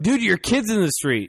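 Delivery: ordinary talk, nothing marked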